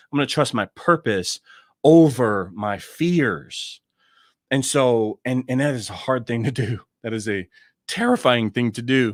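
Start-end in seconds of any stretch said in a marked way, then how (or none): 7.0-9.1 voice cracks and breaks mid-line on "terrifying". Talking about trusting purpose over fears, voice cracking. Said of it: "My voice even cracked when I said it".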